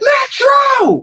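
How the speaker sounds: very slow, high, drawn-out scream at top of lungs. Retelling calling to an uncle around the ring: retelling a scream. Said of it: "I'm screaming through the top of my lungs".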